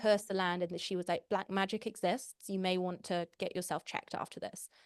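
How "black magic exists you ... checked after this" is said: plain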